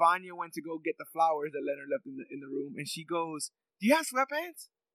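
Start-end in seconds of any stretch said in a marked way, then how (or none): 3.8-4.7 high, excited, eager tone. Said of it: "so she's excited".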